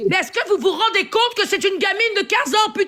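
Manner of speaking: heated, high-pitched angry yelling. In a heated argument, as others keep saying calm down: yelling. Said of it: "parce que tu hurles".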